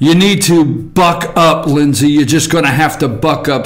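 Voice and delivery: ordinary delivery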